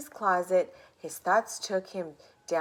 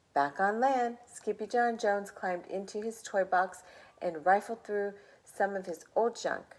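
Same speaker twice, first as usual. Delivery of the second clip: ordinary delivery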